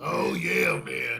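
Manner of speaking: heavy, raspy, gravelly voice. Imitating a wrestling commentator's catchphrase: Booker T impression, smoker's voice. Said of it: "you sound like you've been smoking for, like, fifty years".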